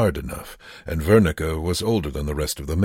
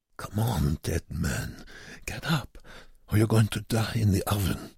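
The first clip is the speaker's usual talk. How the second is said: barely voiced whisper under the breath; 4 semitones higher, 7 dB quieter than usual. Reading a story, the narrator voices Wernicke urging a fallen man up: whispering. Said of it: "Wernicke whispered".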